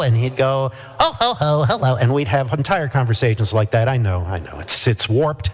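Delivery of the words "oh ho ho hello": put-on little elf character voice. Joking around on the phone with an acquaintance, imitating the elf voice they all loved, in an elf voice. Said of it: "we liked that elf voice so much".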